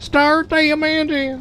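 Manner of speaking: very high race announcer voice. Showing how they'd give the command for a race: imitated race announcer accent. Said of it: "I am saying it in that exact same accent, inflection".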